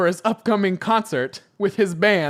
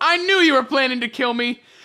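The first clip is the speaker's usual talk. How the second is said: called out, slightly high-pitched; 5 semitones higher than usual. Reading out a fan story, voicing Sonic: Sonic yelling. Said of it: "Sonic yells".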